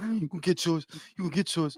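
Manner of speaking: very quiet, almost silent mutter under the breath. Quoting a movie line as Boots would say it: imitating Boots like the dude in Belly. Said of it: "That's how he talk".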